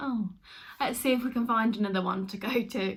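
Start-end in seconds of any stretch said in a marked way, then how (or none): none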